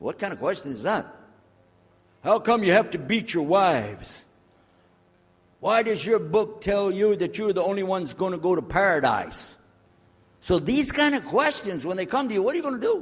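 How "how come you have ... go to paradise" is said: higher, louder, hostile, accusing voice. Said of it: "coming to you with things like".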